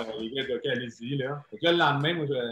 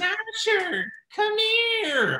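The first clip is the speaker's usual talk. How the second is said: put-on little, small voice, pitched higher; 3 dB louder than usual. Imitating the coach Ken Hitchcock calling a player over: Ken Hitchcock's little voice. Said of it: "il a sa petite voix".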